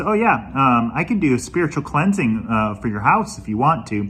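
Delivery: ordinary delivery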